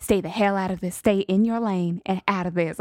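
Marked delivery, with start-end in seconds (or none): none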